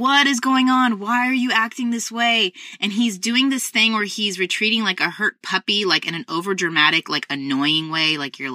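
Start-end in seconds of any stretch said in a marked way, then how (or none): 0.0-2.5 acted-out exasperated, frustrated voice, high-pitched and demanding. Retelling confronting a misbehaving son: retelling own frustrated questions. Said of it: "I'm getting really frustrated".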